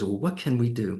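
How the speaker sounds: put-on British accent. Imitating how John Oliver asks the question: John Oliver accent. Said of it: "In that great accent".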